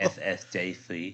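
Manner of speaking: put-on lisping voice. Quoting a clip, speaker adds the lisp: Mike Tyson lisp. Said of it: "you got to add the lisp".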